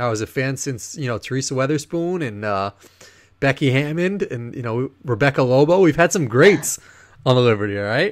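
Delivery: defensive retort. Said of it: "I got very defensive".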